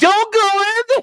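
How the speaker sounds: put-on very high, shrill, loud yell. Retelling someone in a movie theater crowd yelling at a horror movie: imitating someone yelling. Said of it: "somebody in the crowd just yells".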